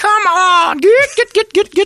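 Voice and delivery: shrill, very high, loud, drawn-out delivery. Showing how everyone does the impression: Brett impression. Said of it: "does the Brett impression".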